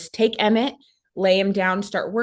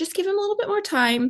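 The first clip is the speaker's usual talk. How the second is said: high, quick, easygoing voice. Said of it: "my midwife's like".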